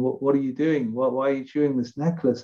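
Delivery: ordinary talk, nothing marked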